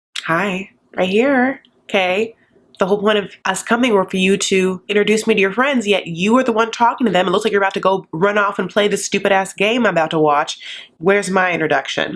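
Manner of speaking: ordinary talk, nothing marked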